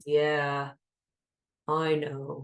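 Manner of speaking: bored, disengaged, low flat monotone. Showing how a bored response in a conversation sounds: bored, flat. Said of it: "It's a very bored um, kind of response, not really engaged".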